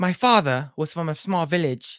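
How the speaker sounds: terrible, overdone put-on British accent. Retelling a scene where Bison captures her: terrible British accent as Bison. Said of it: "I'm doing a weird, dumbass, terrible British accent".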